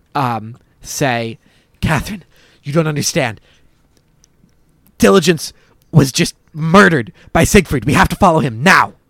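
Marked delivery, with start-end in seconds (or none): 1.8-8.9 winded, out of breath, loud and rushed. Voicing a character urging another to follow: out of breath, in character. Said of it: "sort of out of breath".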